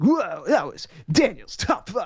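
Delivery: TV promo announcer style voice. Joking about a top five list, Spike TV announcer voice. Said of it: "like a Spike T V announcer".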